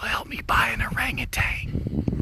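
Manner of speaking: soft, unvoiced whisper.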